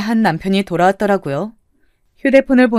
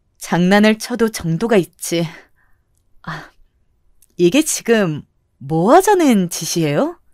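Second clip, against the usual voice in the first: play-acted fury held down, voice lowered, low and suppressed. Retelling confronting two people over a prank: retelling speaking in low, suppressed anger. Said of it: "제가 목소리를 깔고 이야기하니까".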